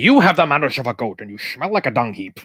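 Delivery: put-on Scottish accent. Showing off an impression while discussing Highlander, Sean Connery impression. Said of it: "I can actually do a pretty good Connery".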